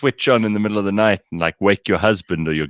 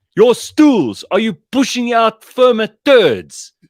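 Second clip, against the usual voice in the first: put-on South African accent, very high-pitched; 14 semitones higher, 6 dB louder than usual. Retelling a pharmacist questioning a customer in a queue, imitating a South African accent. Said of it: "just like a South African would".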